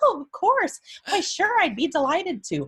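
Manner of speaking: very high, swooping, forced cheerful tone. Retelling a forced cheerful reply about baking cookies: imitating a high-pitched resentful yes. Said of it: "this high-pitched voice".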